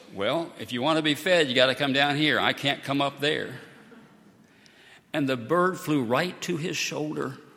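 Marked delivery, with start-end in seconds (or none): 0.2-3.6 fairly gruff, rough-sounding tone. Retelling what Brad said to the bird on the roof: imitating a gruff voice. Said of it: "in something of a gruff voice".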